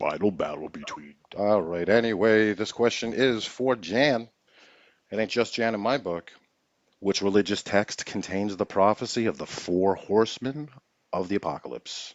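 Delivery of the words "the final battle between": put-on robot hero voice, lower and quieter. Reading a quiz question aloud in an Optimus Prime voice. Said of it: "I was gonna use Optimus Prime".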